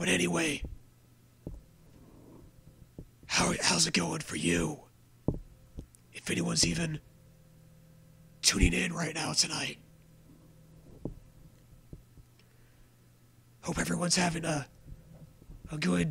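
quiet, awkward whisper. Greeting viewers late at night while a roommate sleeps, whispering awkwardly. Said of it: "whispering really stupidly and awkwardly".

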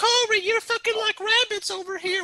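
very high-pitched mock voice.

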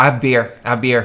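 normal talking voice

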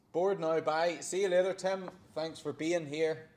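teasing, sarcastic tone. Pretending to dismiss a guest to another speaker, joking sarcasm. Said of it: "See, sarcasm".

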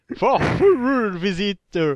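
put-on slow, loud English accent. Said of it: "avec ton accent anglais".

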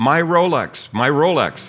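mock, high, loud scream in sheer horror. Telling a story, voicing the young man who lost his arm: retelling a horrified scream. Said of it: "Horrified, he screamed".

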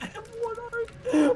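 high, slow mock wail.

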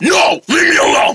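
angry high-pitched shouting. A character told to calm down refuses, in an angry shouting voice. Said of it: "getting the angry voice on".

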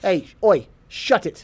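clumsy, terrible, put-on British accent. During an interview, a guest tries speaking in an accent. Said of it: "You trying to speak in an accent".

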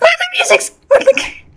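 high, gasping startled cry.

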